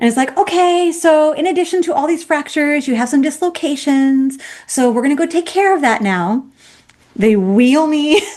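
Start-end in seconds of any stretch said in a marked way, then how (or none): 0.4-6.5 cheery, sweet, bubbly, pitched-up voice. Retelling what a doctor said about fractures and dislocations: imitating a sweet bubbly doctor. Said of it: "very sweet, bubbly".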